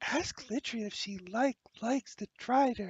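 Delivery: loud theatrical stage whisper meant to carry. Voicing the Flame Princess asking about the Drider: stage whisper. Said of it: "stage whispers to you".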